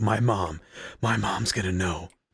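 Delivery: panicked fretting, slow, drawn-out freak-out. Retelling a friend's refusal of weed: imitating Keith freaking out. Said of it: "he was just freaking out like".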